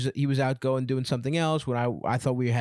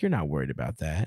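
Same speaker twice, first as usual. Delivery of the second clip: mock plain, no-fuss, matter-of-fact therapist voice; 9 semitones lower than usual. Imitating a therapist's calm reply in a session: imitating a matter-of-fact tone. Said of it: "your therapist says it in such a matter-of-fact way".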